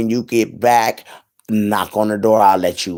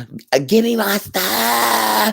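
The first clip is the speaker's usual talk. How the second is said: mock hoarse, high scream, words dragged out; 11 semitones higher than usual. Retelling what she screamed: imitating someone screaming. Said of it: "she's screaming to the top of her lungs".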